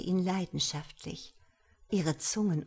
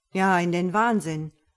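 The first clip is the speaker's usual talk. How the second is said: dry tone, much louder; 8 dB louder than usual. A man counters his companion's teasing boast, with a dry counter. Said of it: "konterte [name] trocken".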